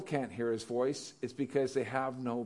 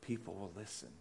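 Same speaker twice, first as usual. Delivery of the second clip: very quiet, low, hushed half-whisper; 5 semitones lower, 14 dB quieter than usual. Teaching about the power of a half-whisper, showing it: half-whisper. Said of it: "if I whisper like this".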